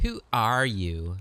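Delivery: obnoxious, mocking, mimicking voice. Voicing an elf who mimics a player: obnoxious mocking voice. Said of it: "mimicking you in an obnoxious voice".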